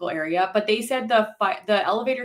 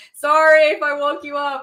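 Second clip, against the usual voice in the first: put-on drunken, loud, high-pitched screaming; 7 semitones higher, 8 dB louder than usual. Retelling what a drunk guy who wandered in said, retelling a screamed apology. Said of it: "And he's like screaming".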